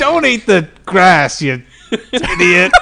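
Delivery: cocky, dismissive delivery. A speaker suggests a line Sonic would say; Sonic the Hedgehog voice. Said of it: "Sonic would say something like".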